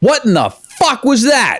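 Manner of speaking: play-acted, very high-pitched, loud, swooping exclamation. Retelling own first reaction to hearing a finished mix: retelling own loud reaction. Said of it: "sorry, that was loud".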